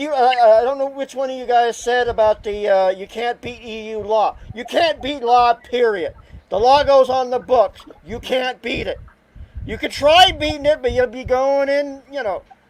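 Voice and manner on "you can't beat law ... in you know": mild, a little worked-up, ongoing rant. Complaining to the group about an order that must be followed: a little ranting. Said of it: "I'm sorry I'm a little ranting".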